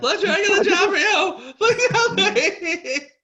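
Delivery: put-on loud, very high, drawn-out girlish shriek. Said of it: "in my non-shrieking girlish voice".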